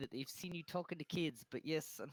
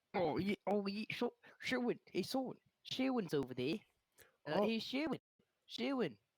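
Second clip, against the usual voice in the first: words mushed and muffled through full mouth; 4 semitones higher than usual. Playing a character calling out to sherwin at the market: acted talking with mouth full. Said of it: "mouthful of food".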